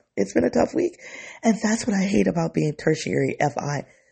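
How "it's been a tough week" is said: very high-pitched, tearful, crying through the words. Talking to viewers about a hard week, crying while talking. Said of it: "I didn't know this emotion was gonna be in here".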